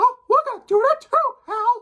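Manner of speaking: weird cartoon-character voice, very high and loud. Describing Disney catching wind of Skylanders, in a weird Mickey Mouse impression. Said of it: "that's a weird Mickey impression".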